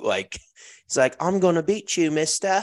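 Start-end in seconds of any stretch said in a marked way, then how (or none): 1.2-2.6 put-on high-pitched young Irish boy's accent. Joking about a top player as a little kid, doing a little Irish kid accent. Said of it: "like a little kid with an Irish accent".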